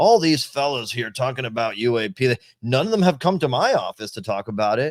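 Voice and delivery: laughing, scoffing, dismissive condescension. Retelling how Turner spoke publicly in the news: imitating Turner laughing dismissively and condescendingly. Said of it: "laughingly, dismissively, you know, condescendingly saying".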